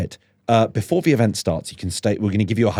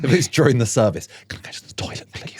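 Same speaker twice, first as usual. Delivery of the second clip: put-on hushed whisper; 3 semitones higher than usual. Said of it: "I find I talk in a hushed whisper".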